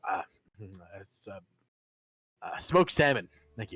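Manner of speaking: very shaky, low, halting, faltering voice. Asked for his order, Gil answers in a very shaky voice. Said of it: "Gil says in a very shaky voice".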